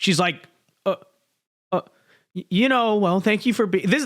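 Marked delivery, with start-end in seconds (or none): 0.9-3.9 put-on halting, hesitant, stalling speech. Pointing out a woman who doesn't know what to say, imitating her stalling. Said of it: "this is what you do when you're trying to stall".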